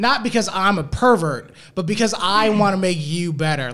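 condescending, patronizing, know-better reassuring tone. Imitating a sexist explaining himself: mock condescending. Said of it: "it is going to be condescending".

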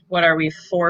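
normal talking voice

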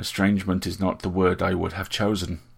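plain

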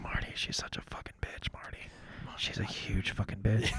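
secretive, hushed, breathy whisper. Retelling whispering into the sound guy's mic: imitating a whisper. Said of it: "me and Morgan were doing that, too".

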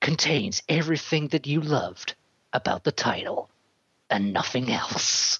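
film trailer voiceover narrator voice. Mocking the World War Z trailer, quoting the trailer guy in movie trailer voice. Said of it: "the guy in the trailer movie voice goes".

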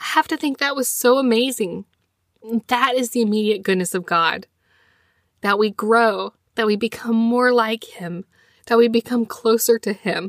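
deeply moved, near tears, close to choking up. Talking to listeners, the speaker gets really emotional. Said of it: "I know I got really emotional there".

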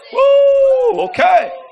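mock startled whoop, high and loud.

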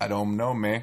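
bad, fumbling Cuban gangster accent. Asked whether a scar makes him Scarface, answering in a bad Scarface accent. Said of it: "so much worse than any rendition I have done of that accent".

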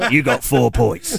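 put-on heavy, thickly laid-on Cockney accent. Remembering a TV show's scorekeeper giving out scores, in a fat Cockney George Dawes voice. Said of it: "a really sort of fat Cockney accent".

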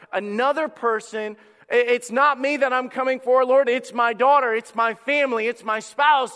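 mock high cry. Acting out a father pleading for his daughter: imitating an outward cry. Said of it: "this is that outward cry".

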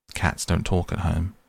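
plain reading voice

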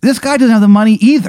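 very high, loud, panicked pleading voice.

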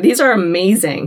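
plain

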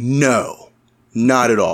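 heavy sarcasm, very slow and drawn out. Retelling answering the front desk person, retelling a super sarcastic reply. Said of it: "I was just like super sarcastic".

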